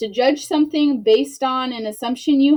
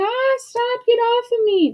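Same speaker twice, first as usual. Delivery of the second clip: very high, very slow, laughing, giggling protest; 12 semitones higher than usual. Showing a class how giggling while wrestling sounds: giggling while talking. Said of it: "you're giggling and you're laughing".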